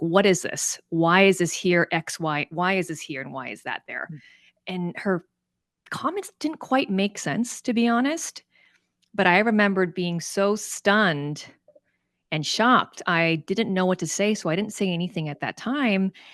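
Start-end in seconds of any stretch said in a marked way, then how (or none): 0.0-4.1 put-on, very aggressive tone. Recounting a woman interrupting their slides in front of everyone, imitating a very aggressive tone. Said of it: "asking me in a very aggressive tone".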